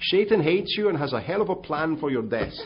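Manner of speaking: put-on very loud, high-pitched Dutch accent. Quoting what Dr. Kuiper told Bill, in Dr. Kuiper's Dutch accent. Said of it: "in his great Dutch accent".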